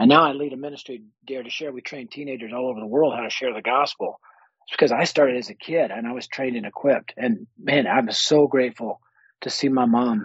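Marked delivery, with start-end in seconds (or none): 7.2-10.2 slow, choked-up voice catching with emotion. A ministry leader telling a story about their mom, choked up. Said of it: "I'm getting choked up thinking about her".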